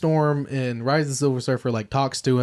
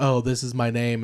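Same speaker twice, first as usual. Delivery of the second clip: flat monotone put-on voice. Describing a film scene, imitating Silver Surfer: monotone Silver Surfer voice. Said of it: "he's just so monotone".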